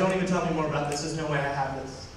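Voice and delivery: ordinary talk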